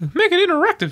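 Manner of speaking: squeaking way up high. Asked by the other speaker to say it like the character, in a Mickey Mouse voice. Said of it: "Say it like Mickey Mouse".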